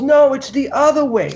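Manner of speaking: mock very high-pitched, loud yelling. Retelling how someone yelled directions during a run: imitating someone yelling. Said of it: "he yells out".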